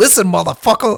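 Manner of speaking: high-pitched movie-narrator voice. Imitating a line the way an actor says it: Samuel L. Jackson voice. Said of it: "Samuel L. Jackson, he's like".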